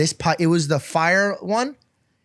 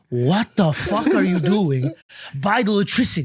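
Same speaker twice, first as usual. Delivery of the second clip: mock furious, angry fatherly scolding; 2 semitones higher than usual. Retelling a dad scolding at the breaker board: imitating an angry dad. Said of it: "He was so mad".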